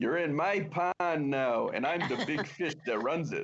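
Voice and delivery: put-on high Chicago accent. Imagining an actor playing a western lawman: Dennis Franz Chicago accent. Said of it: "talk with a Chicago accent the whole time".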